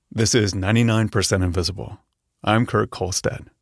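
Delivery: weighty, grave delivery with a touch of smile. Coaching someone on a show intro, the speaker demonstrates it with a smile in the voice. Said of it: "a little bit of smile in your voice".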